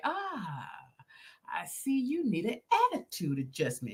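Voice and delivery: put-on sinister, slow delivery. Describing how a performer entered his scene, imitating him; sinister, slow delivery. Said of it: "he come in real sinister, like real slow".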